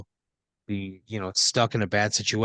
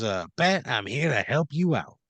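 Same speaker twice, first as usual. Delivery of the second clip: put-on Italian gangster voice; 3 semitones higher than usual. Voicing a gasoline genie who appears like an italian gangster: italian gangster genie. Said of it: "looks just like a classic from Central Casting, like, Italian gangster".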